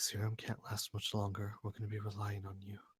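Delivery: very quiet, hushed, angry voice. Voicing a character turning to someone: angry and quiet. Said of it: "angrily, and he'll say quietly".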